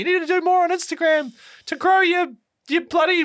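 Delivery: high, pestering voice. Retelling what everyone tells him about posting reels, imitating his wife's voice. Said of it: "me doing my wife's voice".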